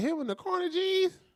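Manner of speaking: high-pitched mocking imitated voice. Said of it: "He said".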